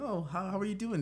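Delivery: very high customer-service voice. Showing how your tone changes greeting people at work, higher-pitched voice. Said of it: "you definitely like change your tone ... a little bit of a higher pitch".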